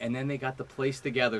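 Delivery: ordinary delivery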